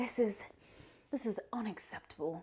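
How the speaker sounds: put-on whispered, botched, failed Irish accent. Retelling a woman complaining to a train waiter, in an attempted irish accent. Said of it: "I can't do the Irish accent".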